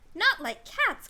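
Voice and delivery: shrill, loud, impassioned, passionate mouse-voice cry. Narrator reading a story, voicing the mouse's cry to Alice, shrill and passionate. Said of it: "cried the mouse in a shrill, passionate voice".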